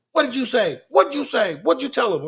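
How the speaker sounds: put-on very high, flipped-out, furious serious yelling. Retelling a man yelling at the speaker in front of the cops, retelling someone yelling. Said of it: "he starts yelling at me".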